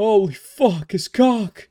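mock awe, high, slow, amazed gasp.

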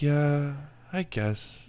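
high, glum, mopey, defeated resignation. Mimicking the other speaker's gloomy reply: imitating Matt's glum tone. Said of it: "the rain look on your face and tone in your voice".

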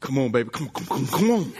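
deep, very low, pleading preacher-style pulpit voice. Joking about talking to his wife at home: T. D. Jakes impression. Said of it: "slap the T D Jakes out of me".

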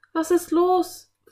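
high, loud, worried. Anne turns to the frightened Philipp with a worried question. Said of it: "fragte Anne besorgt".

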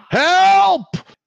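very loud, very high, drawn-out yell. Narrating the group's way through the cargo bay, Perrin yelling for help. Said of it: "and Perrin yells".

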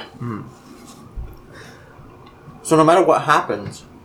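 chewing while talking, speaking through a mouthful. Speaker on a recording, mid-sentence, talking with mouth full. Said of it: "my mouth is full of pizza".

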